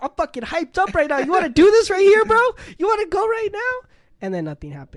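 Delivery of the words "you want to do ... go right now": very high, very loud, shrill, climbing pitch. Retelling a standoff, the speaker mimics the other man: high-pitched voice impression. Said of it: "his high pitched voice".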